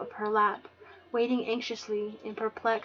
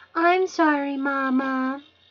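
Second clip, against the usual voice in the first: put-on loud, small little-girl voice, one word drawn out; 4 semitones higher, 7 dB louder than usual. Caught being rude to guests, a young girl answers her mother in a little girl's voice. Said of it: "Marley tossed in a little girl's voice".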